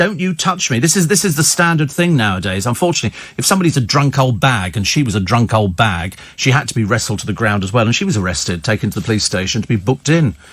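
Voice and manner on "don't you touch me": put-on high, drunken-sounding screaming outburst. Recounting a fight where a man's mother joined in, imitating a woman screaming. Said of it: "she's screaming".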